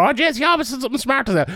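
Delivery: put-on quick, high old Irish woman voice. Repeating praise of a fighter, old irish mother voice. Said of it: "that sounded like an old Irish mother".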